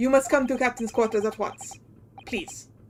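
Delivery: put-on Russian sailor accent. Voicing a ship's sailor character, Russian sailor accent. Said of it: "I lost my Russian sailor voice".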